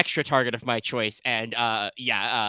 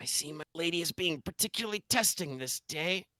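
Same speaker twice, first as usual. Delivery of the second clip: quiet, higher-pitched, muttered under the breath; 6 semitones higher, 8 dB quieter than usual. Voicing a character so only Leona and Porter hear: muttering under her breath. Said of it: "She kind of mutters under her breath".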